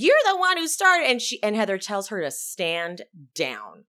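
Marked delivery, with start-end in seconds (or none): 0.0-1.2 loud, fast, pitched-up, heated and raised. Recapping an argument where Emily turns on another woman: imitating Emily getting loud. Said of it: "Emily gets loud towards Heather".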